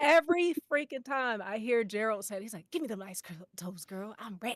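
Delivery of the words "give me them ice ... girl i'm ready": fast, eager, fervent, all-in gusto. Imitating how Gerald says a line every time: imitating Gerald's excited fervor. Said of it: "he says it with such fervor".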